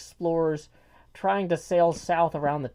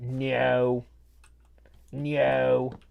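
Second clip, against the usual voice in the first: put-on low, drawn-out no in a South London accent; 4 semitones lower than usual. Speaker talking about Ted Lasso, doing Kent's South London accent saying no. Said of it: "the way he says no is really funny".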